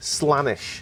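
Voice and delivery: Liverpool Scouse accent. Showing how a name would sound with scouse pronunciations: scouse accent. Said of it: "if they all had Scouse pronunciations, this is what it'd be".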